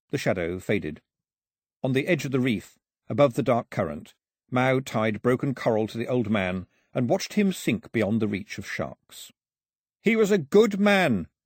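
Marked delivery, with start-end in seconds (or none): 10.0-11.2 high, drawn-out shout. After watching an old man sink beyond the reef, shouted to the sky. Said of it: "he shouted to the sky".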